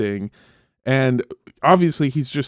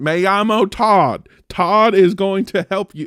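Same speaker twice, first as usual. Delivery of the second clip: put-on higher-pitched Spanish with heavy flat English-speaker accent; 6 semitones higher than usual. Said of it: "In the whitest accent where he's like".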